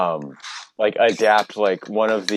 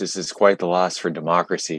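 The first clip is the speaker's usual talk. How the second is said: falsely grieved, put-on mournful tone. Reacting to news of an election loss, pretend sad tone. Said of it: "sorry if you can tell by the tone of my voice".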